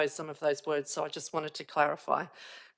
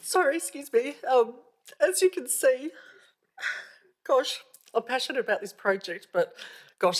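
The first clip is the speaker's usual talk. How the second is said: emotional, tearful, raised, choked-up speech; 9 semitones higher, 5 dB louder than usual. Speaking at a meeting right after a son's letter is heard: tearful, emotional. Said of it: "I didn't think you would move me to tears".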